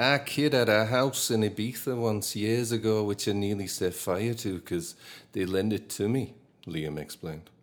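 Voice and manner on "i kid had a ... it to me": put-on Manchester accent, higher. Reading a quote aloud in a Manchester accent. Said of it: "attempt the M-, Manchester accent".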